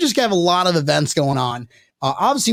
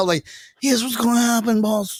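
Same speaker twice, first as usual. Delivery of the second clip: put-on mafia-style voice; 6 semitones higher than usual. Retelling what he told his boss about the schedule, in a mafia member voice. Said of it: "I don't know why I'm sounding like a mafia member right now".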